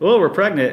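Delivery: put-on matter-of-fact, plain delivery, like it's nothing. Retell how he answered your question about him and Allie, imitating a matter-of-fact reply. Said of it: "so matter of factly".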